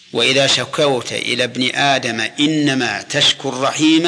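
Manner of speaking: normal talking voice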